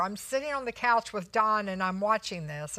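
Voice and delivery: ordinary delivery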